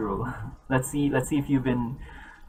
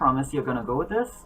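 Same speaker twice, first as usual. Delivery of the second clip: plain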